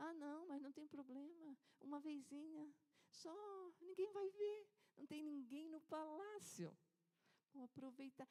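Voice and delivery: sugary, soft, gentle, sweet, drawn-out tone. Acting out the mistress speaking to her servant José in the palace: put-on sweet, soft, slow voice. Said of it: "usando uma vozinha doce, assim, suave".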